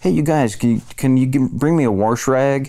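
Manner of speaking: Illinois accent. Recalling theater school, the speaker shows how not to sound: Illinois accent. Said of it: "sound like you're from Illinois".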